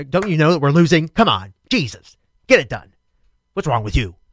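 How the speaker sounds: put-on, loud, impatient urging tone. Retelling urging little kids on while their team was losing: imitating own impatient urging. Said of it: "I'm like".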